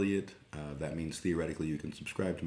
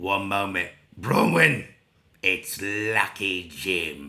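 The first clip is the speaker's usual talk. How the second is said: put-on very loud, thick, furious Australian accent; 3 semitones higher, 10 dB louder than usual. Recalling phoning for Bronwyn and the woman who answered; mock-angry thick Australian accent. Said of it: "had like a thick, very angry uh, Australian accent".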